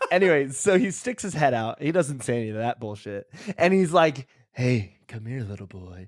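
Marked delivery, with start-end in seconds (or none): 4.5-6.1 low, hushed, scary, sinister creepy voice. Retelling what a man said after sticking his head out, imitating a creepy man. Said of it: "very scary the way he said that second part".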